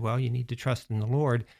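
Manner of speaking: ordinary delivery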